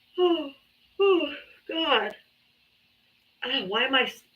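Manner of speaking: talking through a yawn. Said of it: "can't stop yawning".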